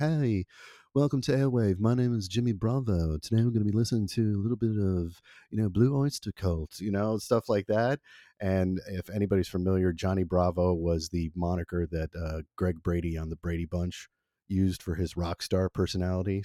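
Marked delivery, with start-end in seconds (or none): 0.0-6.8 British-English way of talking. Recalling his past self introducing a radio show: English accent. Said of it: "I spoke with an English accent, and I talk like this".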